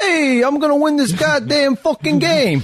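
very high, loud, over-the-top East Coast accent. Mocking how East Coast people sound from Southern California: exaggerated East Coast accent. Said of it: "talking like this".

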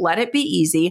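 ordinary talk, nothing marked

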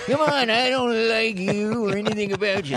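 put-on high-pitched, cranky, crotchety old-man voice. Demonstrating his cranky dog character from an animated film: Lionel Barrymore grumpy old man voice. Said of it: "doing the grumpy old man".

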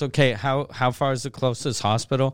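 plain

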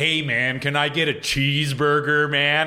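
put-on American accent from a British speaker. Imitating how a british person does an american accent. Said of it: "every time I hear a British person do an American accent".

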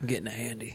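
hushed press-conference voice, soft, almost to oneself. Continuing the imagined press conference: Robert Kraft impression. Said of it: "What's your Robert Kraft impression?".

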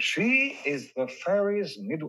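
put-on English accent. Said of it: "doing Al with an English accent".

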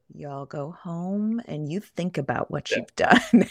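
quiet, calm, disappointed motherly half-whisper. Acting out what a man said after giving a mom look: retelling a quiet half-whisper. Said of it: "he whispered real quietly".

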